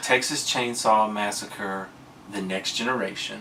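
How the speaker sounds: usual speaking voice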